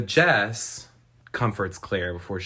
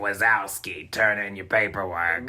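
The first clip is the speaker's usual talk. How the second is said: put-on slow snail voice. Retelling how a creepy caller sounds: Roz from Monsters, Inc. voice. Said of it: "he's talking like this".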